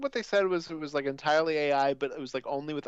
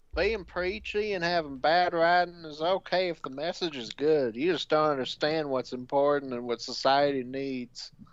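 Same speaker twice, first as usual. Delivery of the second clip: mocking, sarcastic put-on Southern accent. Reading a super chat aloud on request: put-on sarcastic Southern voice. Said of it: "you were using your sarcastic Southern voice".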